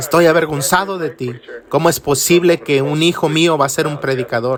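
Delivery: ordinary talk, nothing marked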